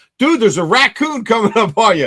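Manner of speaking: high, hollered, alarmed yelling. Telling how a buddy came up behind him, retelling a buddy's yell. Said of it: "And he's yelling at me".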